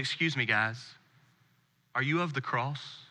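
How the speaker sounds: put-on soft Zulu accent. Speaker retelling a man who approached them in the city, in a South African Zulu accent. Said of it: "with his awesome South African Zulu accent".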